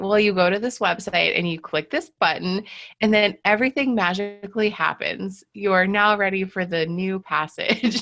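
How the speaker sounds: dry, mock-helpful sarcastic tone. Retelling own usual reply to students: imitating own sarcastic reply. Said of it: "I'm very sarcastic".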